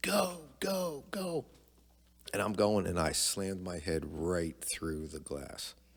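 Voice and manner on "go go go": put-on, very high, cheering yell. Recalling a childhood story, the speaker mimics someone cheering him on: retelling a cheering yell. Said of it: "and he's yelling, like cheering me on".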